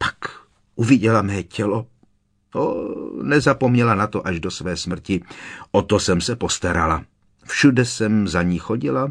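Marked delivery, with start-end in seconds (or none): none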